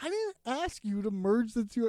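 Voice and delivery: ordinary delivery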